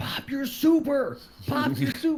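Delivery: high-pitched, acted yell into mic. Retelling a game round, re-enacting yelling into the mic at the team's last player. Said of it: "I'm yelling to the mic".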